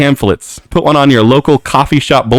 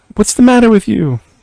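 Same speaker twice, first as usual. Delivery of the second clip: high-pitched, mocking, taunting voice. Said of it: "I don't know how to taunt us".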